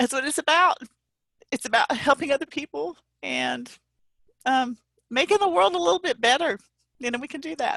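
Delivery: choked up, tearful, crying, breaking voice. Speaker addressing a crowd, breaking into tears mid-speech: crying. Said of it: "I'm sorry, I'm crying".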